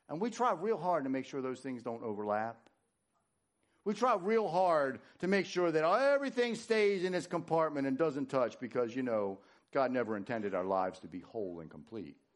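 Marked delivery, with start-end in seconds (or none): 9.7-12.1 sarcastic, mock-serious, dropped very low. Telling listeners how people compartmentalize their lives, sarcastic. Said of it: "That was sarcasm".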